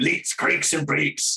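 poor put-on Scottish accent. Trying a Scottish accent and admitting even that's bad: bad Scottish accent. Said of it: "Even that's bad".

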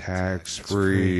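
said slowly, unhurried and drawn out. Speaker repeats a word again for listeners, said slowly. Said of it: "Let's say it again slowly".

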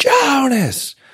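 high, calling yell.

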